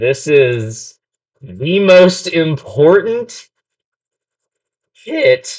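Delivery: voice cracking. Stressing how much the coming hit matters: voice cracking. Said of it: "voice crack, sorry".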